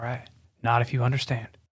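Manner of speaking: soft, hushed half-whisper, barely there. Acting out a character speaking to a man whose mouth they cover, half-whispering.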